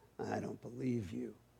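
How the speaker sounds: very soft, low, hushed, scornful sneer. Cougar, chief of the animals, answers Cricket's claim: sneered. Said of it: "Cougar sneered".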